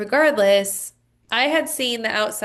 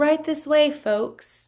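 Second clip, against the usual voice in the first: put-on genteel, proper old Southern gentleman accent, pitched higher; 6 semitones higher than usual. Describing a very proper southern man who spoke to them: proper southern gentleman impression. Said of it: "I can't even talk like him".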